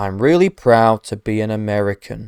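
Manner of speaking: mock uninterested, low, slow, emotionless delivery. Imitating a script about being a proud american, flat emotionless voice. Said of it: "he also just sounds so uninterested ... there's no emotion. He's like".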